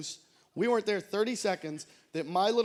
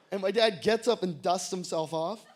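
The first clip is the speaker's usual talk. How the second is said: usual speaking voice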